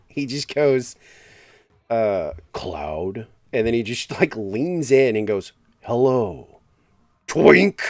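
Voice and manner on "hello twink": dark, threatening, menacing villain voice. Retelling how he leaned in and greeted Cloud, imitating a menacing tone. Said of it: "he says in like the most menacing tone".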